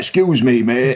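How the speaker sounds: put-on English accent. Describing an actor's natural accent to others: Sean Bean accent impression. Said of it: "I think it's what his natural accent is. He's like".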